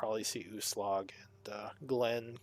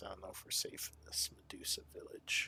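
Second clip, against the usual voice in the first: voice lowered to a hushed near-whisper; 4 semitones lower, 10 dB quieter than usual. Voicing the character Solera mid-scene, in a lowered voice. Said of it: "She lowers her voice".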